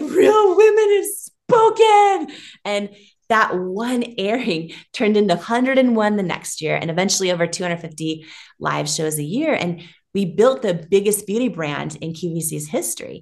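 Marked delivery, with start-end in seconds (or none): 0.0-2.3 very high, loud sobbing through tears. Retelling a moment at the QVC studio, re-enacting own bawling. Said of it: "I'm like bawling and I'm like".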